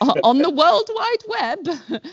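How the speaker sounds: put-on high, slow old woman voice. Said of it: "makes me sound like a grandma".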